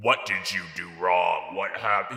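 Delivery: booming voice like a giant floating oracle. Retelling how someone in a video asked a question: booming Wizard of Oz voice. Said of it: "like he was the fucking Wizard of Oz head, like the booming".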